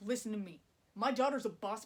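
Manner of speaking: put-on resentful voice. Retelling a film scene where Tim pulls Ted aside, imitating Tim's resentment. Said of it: "he has real resentment in his voice".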